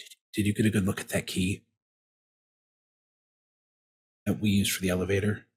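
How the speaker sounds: quiet mutter kept under the breath. Asking a companion in character about the elevator key: said under the breath. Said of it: "under my breath say".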